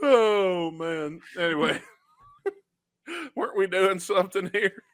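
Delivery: talking while laughing to tears. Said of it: "I'm crying a little bit".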